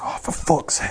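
fed-up, angry, breathy, whispered mutter under the breath. Retelling a man's reaction after an egg was thrown at him, imitating a pissed-off man. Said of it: "he's just like pissed off".

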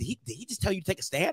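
very quiet, hushed, accusing, angry tone. Retelling how his partner came out holding a curling iron: imitating his partner's angry question. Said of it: "she came out here, like, she had the curling iron in her hand. She was like".

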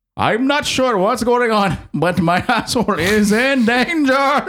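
bad Indian accent, very high and very slow. Performing a line as the others asked: bad indian accent. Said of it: "do, like, an Indian accent".

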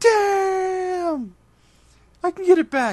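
very high, very slow, loud, drawn-out upset yell. Retelling a movie scene where Raphael loses his sai: imitating Raphael yelling. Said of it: "and he yells".

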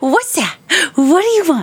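high cat-talk voice. On a show, showing how the speaker talks to their cats. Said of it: "Sounds like how I talk to my cats".

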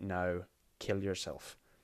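flat, dry, expressionless, emotionless deadpan. Anva looks the woman in the eye and gives her an order: deadpan. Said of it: "just deadpan says".

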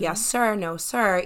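play-acted, extra-courteous, polished, eloquent polite voice. Imagining being stopped by the police: put-on eloquent polite voice, big smile. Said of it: "my most eloquent voice and my biggest smile".

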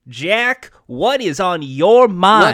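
put-on, laid-on Southern accent. Trying to sound like Ted Lasso for the others, Ted Lasso impression. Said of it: "try to do an impression of what Ted Lasso sounds like".

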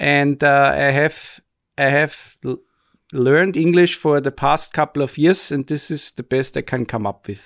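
put-on Austrian English accent. Speaker introducing this week's topic in a put-on Austrian English accent. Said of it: "don't laugh at my dialect".

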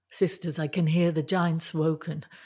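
plain reading voice

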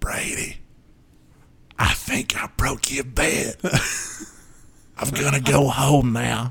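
high, hushed whisper. Retelling what he whispered to the bed's owner after breaking it: whispering. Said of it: "I whispered".

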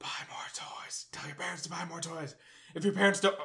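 put-on whisper. Acting out a toy talking into a sleeping child's ear: whispering a toy's line. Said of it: "why am I whispering?".

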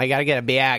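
mock thick, heavy Midwest accent. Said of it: "has the thickest Midwest accent".

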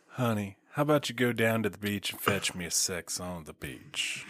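very quiet, put-on Southern accent. A co-host riffs on funny cocktail names, Southern accent like Designing Women. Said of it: "in a southern accent".

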